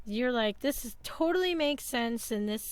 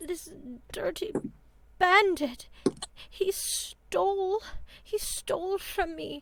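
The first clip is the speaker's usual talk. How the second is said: put-on frail, high, shriveled old lady voice; 7 semitones higher than usual. In a game scene, a shriveled old lady answers an offer of help, in a frail old woman voice. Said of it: "a very shriveled up lady barely blinking".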